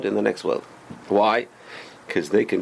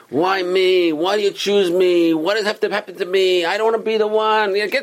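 put-on, pitched-up, full-on miserable whining voice; 8 semitones higher, 4 dB louder than usual. Acting out someone crying to God, asking why me, in a put-on whiny voice. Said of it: "you put on the most whiny voice".

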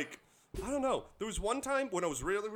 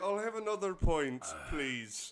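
playful, fake, put-on Irish accent; 3 semitones lower than usual. Joking at the start of a podcast: Irish accent. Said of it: "I can't do an Irish accent".

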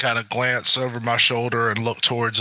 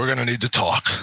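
confidential tone, as a private aside. Player voicing a character telling another character they need to talk, in a hushed voice. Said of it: "in kind of a hushed voice".

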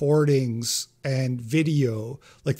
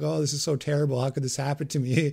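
put-on crying. Mocking women who agreed, then cried at the end: imitating someone crying. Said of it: "started crying".

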